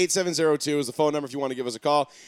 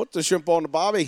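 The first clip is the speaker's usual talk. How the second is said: failed Australian accent. Trying an australian customer's accent after saying they can't do it: bad australian accent. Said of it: "it's not even close".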